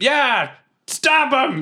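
very high shouted yell in character. Playing a character joining a brawl: yelling in character. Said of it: "I yell".

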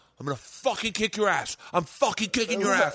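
put-on furious, angry male voice. Retelling a man's threat after being thrown off behind the boat, imitating a furious man. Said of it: "he is fucking steaming".

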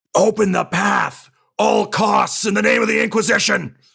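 very high, raspy, rough, screaming yell. Playing a character as everyone is getting cut down, screaming into the vox. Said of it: "I'll just start screaming into the Vox".

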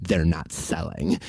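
imitated muttered whisper. Retelling what their mom whispered on arriving at the house, imitating mom's whisper. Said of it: "whispers under her breath".

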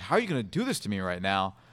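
amused, speaking through laughter. Retelling Bill Cowher's reaction to a surprise Hall of Fame visit: laughing while talking. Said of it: "kinda laughing".

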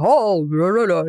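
big, round, barrel-chested voice, very slow and drawn out. Imitating a teacher named Jim: big barrel-chested voice. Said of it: "he had this big barrely voice".

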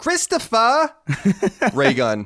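put-on New York Italian accent. A podcast host introduces his co-host by full name, in a Sopranos-style accent. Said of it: "do my Sopranos a little bit as well".

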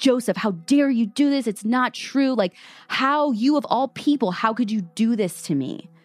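play-acted screamed outburst, kept small and mild. Retelling a defendant's outburst in the courtroom: imitating someone screaming. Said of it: "started screaming".

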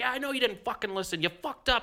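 put-on, very high-pitched screaming. Retelling two men going back and forth, retelling a screaming argument. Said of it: "they're going back and forth at each other".

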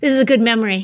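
heavy, dripping sarcasm. Responding to a reminder of a ride that shut down: dripping sarcasm. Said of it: "The sarcasm is dripping".

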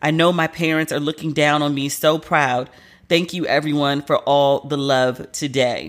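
ordinary delivery

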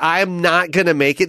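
ordinary talk

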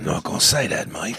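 put-on gravelly tough-guy voice. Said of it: "everything's got a gravelly deliverance".

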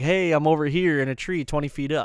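ordinary talk, nothing marked

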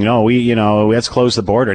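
ordinary talk, nothing marked

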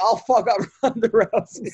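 mock feeble, weak, slow dying voice. Retell how he said he wanted to fight Ronda Rousey, imitating someone on his deathbed. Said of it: "he said it like from like his like deathbed".

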